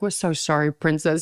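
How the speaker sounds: put-on sobbing, crying through tears. Retelling how parents answered on the phone: imitating parents crying. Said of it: "They started crying their eyes out".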